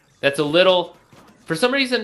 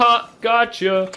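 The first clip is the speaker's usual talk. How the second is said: high-pitched, slow, taunting mock cop voice. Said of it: "going like".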